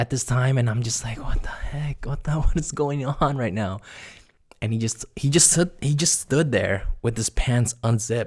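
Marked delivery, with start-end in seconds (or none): 1.2-3.8 put-on bewildered, frightened disbelief, high-pitched. Retelling own reaction to a friend's strange behaviour: imitating own confused, scared reaction. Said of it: "I was just so confused and scared".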